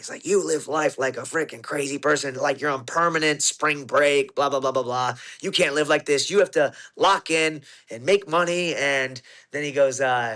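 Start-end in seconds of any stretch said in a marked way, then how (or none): none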